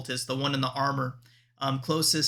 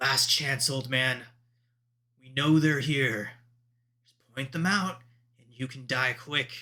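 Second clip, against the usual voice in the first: low, deep-set voice in dropped register. Voicing a cultist threatening an old man behind a door: low voice. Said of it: "in a low voice".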